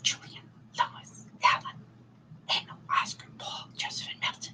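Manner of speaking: soft, breathy whisper from start to finish. Repeating the names of the family's men again: whisper. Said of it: "Say it again in a whisper".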